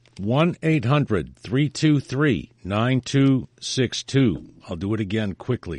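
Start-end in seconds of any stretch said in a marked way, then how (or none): 0.2-4.1 said slowly. Reading out a phone number for listeners: said slowly. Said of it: "I'll make it slow".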